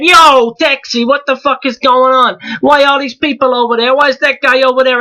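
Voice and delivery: Italian-American New York accent. Demonstrating regional accents, hailing a taxi in a New York accent. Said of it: "New York kind of accent".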